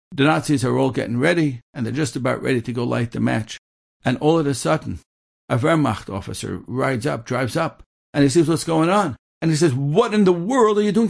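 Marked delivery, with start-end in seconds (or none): 9.7-11.1 mock very high, appalled, outraged screaming. Telling a story, acting out an officer screaming at the Nazis: retelling an officer's screaming. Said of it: "He starts screaming".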